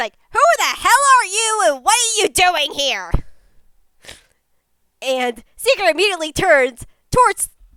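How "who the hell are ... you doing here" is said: put-on high, cranky, grouchy old grandma voice calling out. A voice calls out at a kid tormenting a crab; grouchy grandma voice. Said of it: "like a grouchy sort of almost grandma call out".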